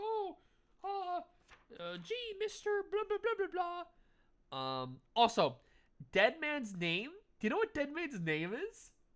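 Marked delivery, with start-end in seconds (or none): 0.0-4.8 put-on tiny child voice, very high pitch. Retelling a scene with a young character: imitating a little kid. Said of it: "he's like a little kid being like".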